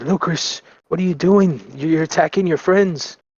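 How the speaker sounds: high, pleading, begging voice. Pleading in character with a friend who is attacking: pleading in character.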